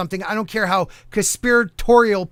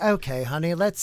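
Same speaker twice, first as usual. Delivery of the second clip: put-on British accent, quieter; 3 semitones lower, 4 dB quieter than usual. Imitating how a streamer talks off stream: imitating someone in a british accent. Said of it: "she goes British?".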